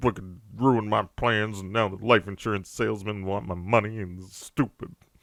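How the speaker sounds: mock-grumpy complaining. During a game playthrough, voicing a grumpy-faced on-screen character, mock-grumpy complaining. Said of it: "He's got such a grumpy face".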